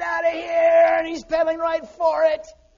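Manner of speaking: loud, drawn-out scream. Retelling how a friend screamed at a chasing dog: imitating screaming. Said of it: "He's screaming at that dog".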